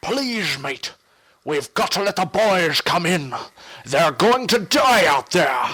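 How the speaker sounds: put-on pirate-style voice. Showing the voice first planned for a character in their game; sort of a pirate voice. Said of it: "originally I was gonna go with sort of a pirate voice".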